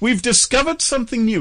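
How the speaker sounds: mock-excited boasting, high pitched.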